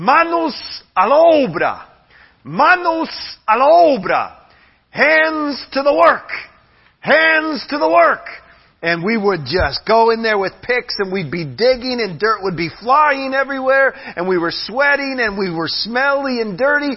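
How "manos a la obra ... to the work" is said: very high, stretched-out, full-lung yell. Recalling a man who came every morning with pick and shovel, imitating his yell. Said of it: "he would yell at the top of his lungs".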